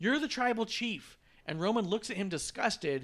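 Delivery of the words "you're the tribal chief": high-pitched, loud, in-your-face screaming. Retelling a match scene, imitating Paul Heyman screaming at Roman. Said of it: "Paul Heyman starts screaming at Roman".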